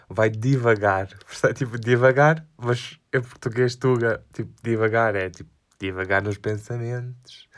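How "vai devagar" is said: Brazilian Portuguese accent. Speaker repeats a word until it sounds Brazilian, Brazilian Portuguese accent. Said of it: "parecia que estava a falar brasileiro".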